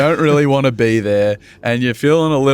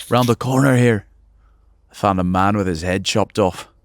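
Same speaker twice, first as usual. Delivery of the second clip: put-on Scottish accent, lower pitch; 4 semitones lower than usual. Retelling meeting the boss at a new job: imitating Angus, Scottish accent. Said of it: "big, burly Scottish dude".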